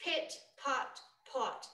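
whispered, breathy British accent with every T hit hard. Showing how to properly do a british accent: british accent hitting the t's. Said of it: "That's hitting the T's".

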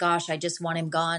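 ordinary delivery

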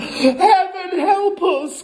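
very high-pitched, fearful, frightened outcry. Narrator reading the mother's line as she clutches her husband, crying out. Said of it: "cried the mother, clutching her husband round the neck".

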